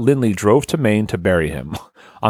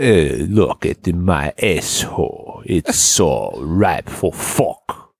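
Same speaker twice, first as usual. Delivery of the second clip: put-on French-sounding accent; 5 semitones lower than usual. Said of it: "You're more French now".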